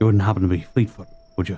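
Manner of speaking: whispering. Leaning down to a cat and asking its name: whispering. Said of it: "I'll whisper in the cat's ear".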